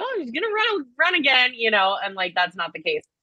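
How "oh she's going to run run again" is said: very high-pitched, thrilled, excited gushing. Retelling own reaction to hearing "Hillary", retelling own excited reaction. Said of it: "I'm getting excited".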